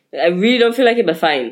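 insistent protesting tone, then giving in.

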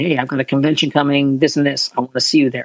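usual speaking voice

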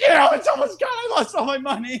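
put-on panicked, freaking-out voice. Retelling breaking down in front of a friend who asked what's wrong: retelling own panicked freak-out. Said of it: "I just started freaking out".

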